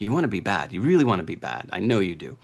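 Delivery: put-on devilish, tempting whisper. Describing a tempter urging people to be bad: imitating a devil whispering temptation. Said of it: "the devil on your shoulder kind of whispering into your ear".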